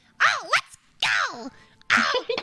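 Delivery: very high, squeaky, swooping, sing-song cartoon voice. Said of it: "so if I'm Toe, I'll be like".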